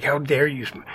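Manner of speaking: normal talking voice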